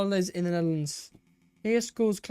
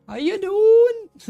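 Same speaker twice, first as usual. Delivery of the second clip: terrible Welsh accent, very high and booming; 13 semitones higher, 8 dB louder than usual. Speaker talking about Welsh accents tries one out, a failed Welsh accent attempt. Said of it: "That's not a Welsh accent. I'm terrible".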